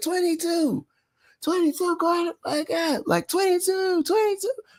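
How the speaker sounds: very high, screaming, taunting heckler voice. Retelling a fan in the stands trolling a player: imitating a fan screaming. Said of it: "he was screaming it out".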